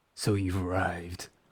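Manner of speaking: put-on deep voice, dropped low. Voicing a character's line after gesturing for quiet, put-on deep voice. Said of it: "with a deep voice".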